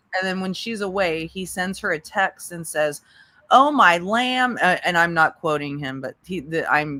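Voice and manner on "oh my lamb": mocking impersonation, higher and louder. Retelling a text he sent her: mocking imitation of him. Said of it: "I'm mocking him".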